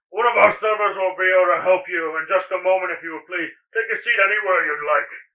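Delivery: loud yelling, calling across. Game narrator voicing the bartender calling to the players, yelling bartender. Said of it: "the bartender yells to you again".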